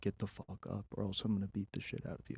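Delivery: hushed, very quiet whispering. Retelling a threat said into someone's ear: retelling a whispered threat. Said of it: "whisper in his ear".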